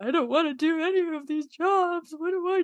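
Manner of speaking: high, tearful, sobbing, crying voice. Recalling going to a professor after class as a sophomore: retelling own sobbing. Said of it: "I went to the professor after class sobbing".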